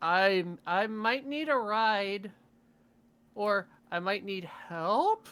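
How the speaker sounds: put-on drunken speech. Answering a call in character, asking for a ride: sounding drunk. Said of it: "You sound drunk".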